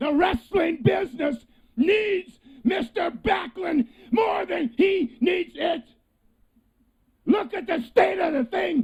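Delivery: high, shouted, furious and intimidating angry rant.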